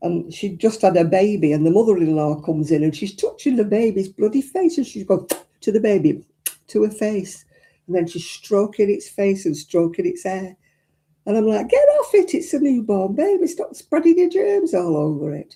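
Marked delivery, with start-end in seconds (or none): 11.7-15.5 mock furious yelling, high-pitched and swooping. Speaker re-enacting yelling at a video she watched, retelling a shout. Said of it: "I'm shouting at the blinking video".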